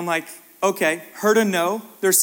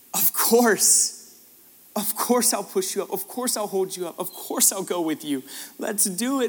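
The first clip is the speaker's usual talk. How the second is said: mock crying voice, as if speaking through tears. Retelling their answer to a girl who asked to be pushed up, through tears. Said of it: "I'm like crying at this point".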